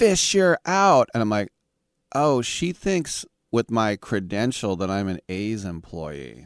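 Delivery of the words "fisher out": very high, shrill, loud raised screaming. Retelling how a drunk girl kept screaming in their face, imitating her screaming. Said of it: "she kept screaming in my face".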